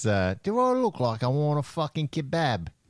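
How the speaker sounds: put-on Cockney accent, laid on thick, swooping. Recalling a character's famous line, in a cockney accent. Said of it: "in a Cockney accent".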